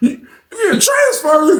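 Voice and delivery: very high, put-on voice cracking near tears. Retelling what Oscar said as everyone in the park went quiet, retelling Oscar's cracking voice. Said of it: "His voice cracked".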